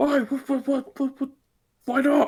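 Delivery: high, loud, alarmed calling out.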